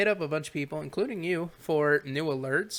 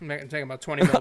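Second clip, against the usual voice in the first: mock bored, flat, couldn't-care-less uncaring monotone. Imitating a man's delivery of a line in a mock-uncaring flat monotone. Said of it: "in his like monotone, not caring".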